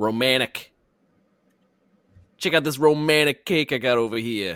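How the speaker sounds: New Jersey accent slipping out. Playing a game, the speaker shows off an item to the others: new jersey accent. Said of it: "My New Jersey accent coming out there".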